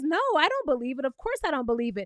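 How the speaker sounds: ordinary delivery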